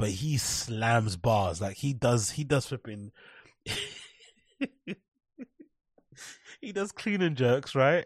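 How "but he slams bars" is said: slams stressed, dragged out very slow and heavy. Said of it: "I think I slam bars".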